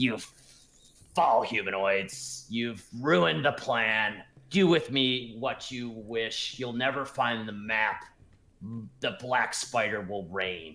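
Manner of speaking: harsh, grating, inhuman alien creature voice. Describing a creature to the players, then voicing it, grating alien-like voice. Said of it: "just more of a grating, sort of alien-like voice".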